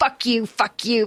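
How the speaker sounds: put-on smiling delivery. Speaker retelling a woman on a show cursing, imitating smiling while cursing. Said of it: "she's like smiling as she's saying like".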